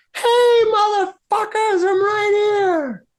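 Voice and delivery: very high, very slow goblinish shout. Narrating a distant voice yelling out to the players, in a goblinish yelling voice. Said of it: "In this goblinish kind of".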